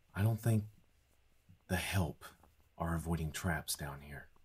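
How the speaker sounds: hushed stage whisper under the breath. A character speaks to companions in a stage whisper. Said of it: "Kendall whispers in a stage whisper".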